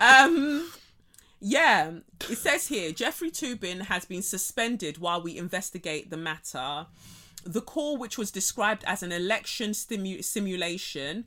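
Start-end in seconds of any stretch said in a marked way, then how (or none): none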